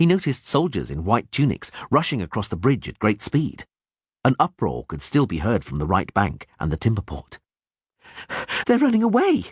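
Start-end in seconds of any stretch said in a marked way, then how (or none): 8.7-9.4 breathless, panting, very high-pitched cry. Reading a story where a character runs up to another: panting. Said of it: "Dandelion panted".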